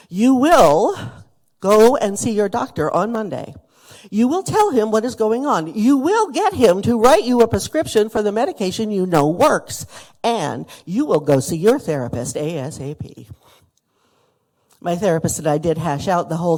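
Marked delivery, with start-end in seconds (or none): 0.2-13.3 play-acted, loud, sympathetic but firm tone. Retelling a friend's instructions to see the doctor, imitating firm sympathetic words. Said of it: "sympathetic, but firm".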